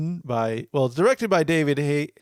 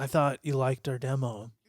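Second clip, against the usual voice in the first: put-on understated, subdued, quiet delivery, quieter; 7 dB quieter than usual. Quoting a movie character's line, imitating an understated, quiet delivery. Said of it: "Understated, quiet".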